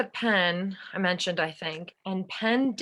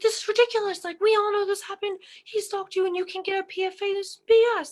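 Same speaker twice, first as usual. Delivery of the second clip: mock very high, furious, ranting shout; 13 semitones higher, 3 dB louder than usual. Retelling a friend's angry reaction after police left: imitating someone yelling. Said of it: "And he was, like, yelling".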